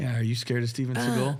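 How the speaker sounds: ordinary delivery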